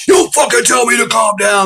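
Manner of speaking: mock shrill, high, furious cop yell. Speaker retells a man snapping back at being told to calm down: retelling an angry yell. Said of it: "starts yelling fucking commands at me".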